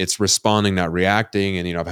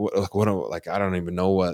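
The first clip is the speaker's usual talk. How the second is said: put-on crying, sobbing voice; 4 dB quieter than usual. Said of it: "sitting there bawling".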